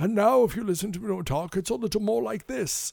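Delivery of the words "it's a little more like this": raspy, creaky voice. Comparing how an actor talks now: raspy Patrick Stewart voice. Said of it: "he has that rasp that he's gotten".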